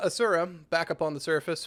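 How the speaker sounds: normal talking voice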